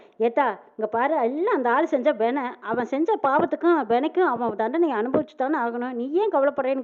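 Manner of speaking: ordinary talk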